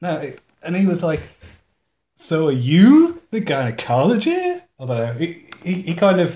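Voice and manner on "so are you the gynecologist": pitch rising and falling on every word. Retelling a guy's question about a gynecologist, up-down pitch on every word. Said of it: "Every part of the sentence had a upwards and downwards inflection".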